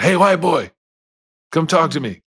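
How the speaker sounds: high, hollered, calling-out yell. Retelling how a prisoner across the hall called out: imitating someone yelling. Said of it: "just yelled out".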